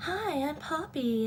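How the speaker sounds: soft, airy, almost breathy little voice. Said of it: "Poppy's is very, like".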